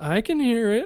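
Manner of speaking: nonchalant, casual, slightly high voice. Describing a film scene, acting out Lance's reply to his girlfriend: imitating Lance, nonchalant. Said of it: "just so nonchalant".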